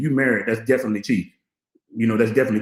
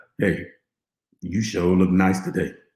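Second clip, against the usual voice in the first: smooth, close-miked radio announcer voice; 6 semitones lower, 3 dB quieter than usual. Getting close to the microphone to deliver a line in a radio voice. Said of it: "Let me do my radio voice. Let me get close to this microphone".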